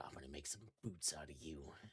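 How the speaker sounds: very quiet, hushed half-whisper. A tabletop player's character speaks to a dying creature, half-whispering. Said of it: "I'll whisper".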